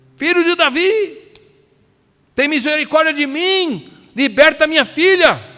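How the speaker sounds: acted-out shouted pleading. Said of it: "E olha que eu tô gritando".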